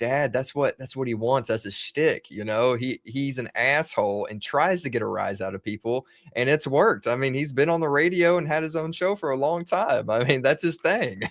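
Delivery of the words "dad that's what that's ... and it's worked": ordinary talk, nothing marked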